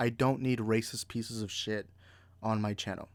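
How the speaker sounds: usual speaking voice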